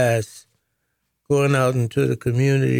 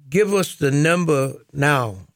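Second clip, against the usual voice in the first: ordinary delivery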